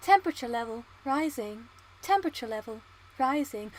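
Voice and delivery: robotic synthetic computer announcer voice. Introducing today's poll as a bit, doing a computer voice. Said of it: "I think I could do computer voice quite well".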